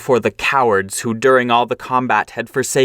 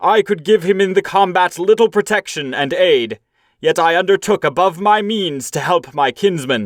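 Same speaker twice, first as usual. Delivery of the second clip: stern, solemn, angry, high-pitched, reproachful outcry; 7 semitones higher than usual. A warrior rebukes the cowards who failed their king: angry outcry. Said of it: "Then [name], sorrowful in soul, looked with anger at the cowards. No soft words had he for the craven-hearted crew. / he cried".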